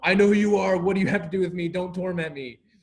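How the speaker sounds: loud, high-pitched scream at the top of the lungs. Retelling a Bible story, voicing the demon-possessed man, acting out a scream. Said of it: "he screams at the top of his lungs".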